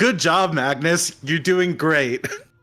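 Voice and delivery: said very loudly. A character slaps a companion's shoulder to congratulate him, very loudly. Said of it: "and like very loudly go like".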